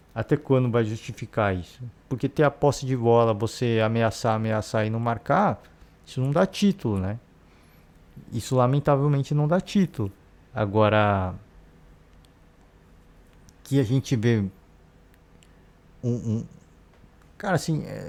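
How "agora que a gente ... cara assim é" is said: slow, halting stammer, groping for words. Struggling to find the right word mid-sentence, stammering. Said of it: "por isso que eu tô gaguejando bastante".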